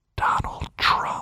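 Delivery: hushed, secretive, conspiratorial stage whisper. Telling listeners to lean in before giving a name, whispered. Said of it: "I got to whisper this one".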